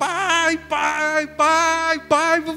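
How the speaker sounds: high, loud yelling.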